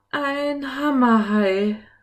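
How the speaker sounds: breathless, almost out of breath, high gasp. Seeing a strange fish approach their submarine, he cries out almost breathless. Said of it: "sagte er fast atemlos".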